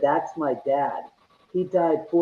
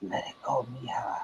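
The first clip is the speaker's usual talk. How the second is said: faint, very quiet whisper right at the microphone; 4 semitones lower, 12 dB quieter than usual. Reproducing a man's voice heard on a digital recorder, imitating a whispery voice. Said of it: "a whispery voice right next to the microphone".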